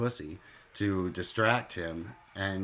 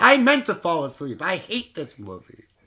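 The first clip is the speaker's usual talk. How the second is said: mock aggressive voice, higher and louder; 10 semitones higher, 11 dB louder than usual. Retelling what the other speaker said at the movie: imitating her aggressively. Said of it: "I didn't say it so aggressively".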